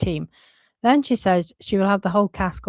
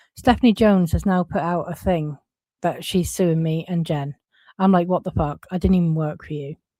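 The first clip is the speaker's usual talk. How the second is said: ordinary talk, nothing marked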